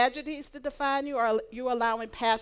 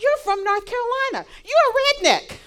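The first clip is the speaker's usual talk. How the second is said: mock thrilled, very high, swooping, loud voice; 11 semitones higher, 8 dB louder than usual. Retelling what the ticket seller said on seeing North Carolina: imitating an excited ticket seller. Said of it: "he got so excited".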